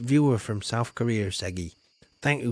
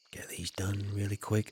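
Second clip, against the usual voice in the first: speaking in a whisper, quieter; 3 semitones lower, 8 dB quieter than usual. Watering plants on stream and talking to chat: whispering. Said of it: "I don't know what I'm whispering for".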